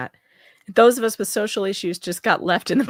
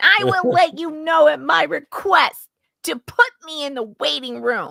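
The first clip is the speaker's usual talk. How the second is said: put-on bratty, high, whiny, petulant little-kid voice; 7 semitones higher than usual. Retelling what a man said, using the Bruce voice. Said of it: "I have found my Bruce voice".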